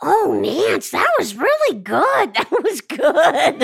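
put-on raspy woman's voice. Retelling praise after a table read, imitating Julie Kavner. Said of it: "Julie Kavner was so".

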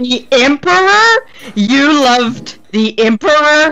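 stunned, disbelieving surprise. Captain Horn stops mid-sentence, recalling a rumor about her, surprised. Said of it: "the surprise in your voice".

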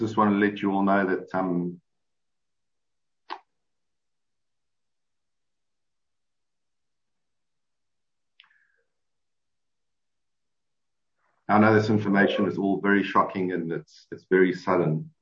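fighting back tears. Making a statement to the group, holding back tears. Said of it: "I'll do my best to do this without crying".

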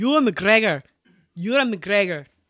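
put-on Scottish accent. Answering a request to speak with a scottish accent: scottish accent. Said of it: "in Scottish".

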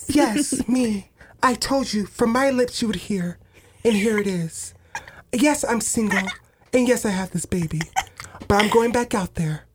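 soft whispering voice, put on. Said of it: "You have to whisper".

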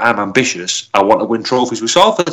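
plain

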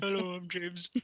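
soft, poor impression, marble-mouthed like rocks in mouth. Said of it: "that's a terrible impression".

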